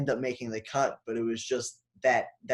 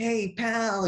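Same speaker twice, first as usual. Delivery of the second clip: very high, pitched-way-up put-on voice; 10 semitones higher than usual. Retelling a co-star's knock on the trailer door: Luke Wilson voice. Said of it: "I'm trying to do Luke's voice".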